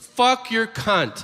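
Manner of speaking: put-on child's high, slow blurted tic outburst.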